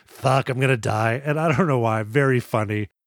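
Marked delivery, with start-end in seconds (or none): 0.2-1.2 mock crestfallen, resigned villain voice. Retelling a movie bad guy's reaction to a grenade: imitating a crestfallen bad guy. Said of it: "he's just crestfallen".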